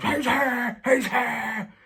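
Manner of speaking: high, booming, shrill, drawn-out announcer-style bellow. Retelling a commentator's call of a surprise return: imitating Michael Cole screaming. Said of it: "He was screaming at the top of his lungs".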